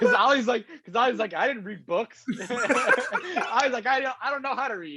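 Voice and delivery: very high voice, words broken by laughter. Explaining to the other speaker why the question was funny, laughing while talking. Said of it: "don't laugh".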